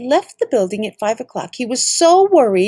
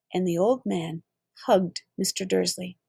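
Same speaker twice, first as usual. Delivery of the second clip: ordinary delivery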